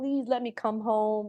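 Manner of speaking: put-on, earnest, pleading begging tone. Retelling begging the people who said no: retelling own past begging. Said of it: "I was begging".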